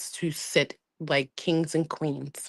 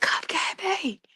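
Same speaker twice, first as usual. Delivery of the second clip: acted high-pitched scream. Retelling what was screamed on waking up: retelling own screaming. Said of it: "I was screaming, like".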